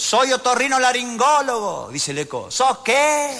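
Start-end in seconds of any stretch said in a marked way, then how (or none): 0.0-1.9 put-on loud shout, much higher in pitch. Telling a joke, playing a doctor calling to an echo, acting out a shout. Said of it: "así gritaba el médico".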